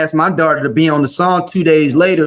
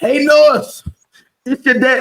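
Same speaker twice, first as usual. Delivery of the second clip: pitched-up, upset, worked-up man's voice; 9 semitones higher than usual. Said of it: "I'm changing my voice 'cause he's getting more upset".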